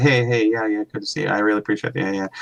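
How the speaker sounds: put-on toneless voice. Describing people met at the expo, acting out their greeting: imitating a flat monotone greeting. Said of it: "It's a monotone".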